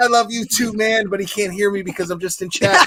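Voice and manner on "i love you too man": high, stretched-out screaming yell. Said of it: "I'm just fucking screaming at the screen".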